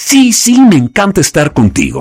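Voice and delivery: visceral, high, wide-ranging angry burst.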